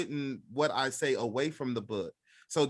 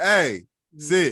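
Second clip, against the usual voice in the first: blunt, short, curt man's voice; 2 semitones higher, 10 dB louder than usual. Explaining how dogs react to a man's voice, imitating a man's command. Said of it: "if you get a dude in there, be like".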